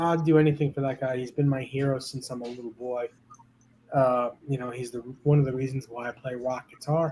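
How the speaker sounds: plain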